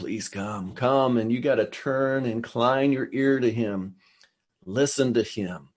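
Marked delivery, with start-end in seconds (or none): 0.0-1.2 hushed, quieter whisper. Acting out the call to come near, not yelling now but whispering. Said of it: "instead of yelling, he's whispering".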